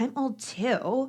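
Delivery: snide, snarky, condescending tone. Retelling what someone said at a fireplace: imitating a snarky tone. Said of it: "she said it with this, like, snarky tone".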